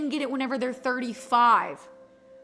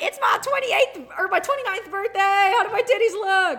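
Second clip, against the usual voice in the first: high-pitched, loud, mocking send-up voice; 6 semitones higher, 5 dB louder than usual. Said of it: "I'm gonna be all over Reddit".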